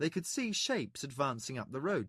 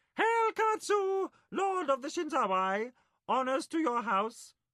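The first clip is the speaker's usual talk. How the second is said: very high, loud, strong piping creature voice; 13 semitones higher, 5 dB louder than usual. Narrator reading a creature's formal salute to a lord, in Khalak's high piping voice. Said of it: "in a high, piping voice said".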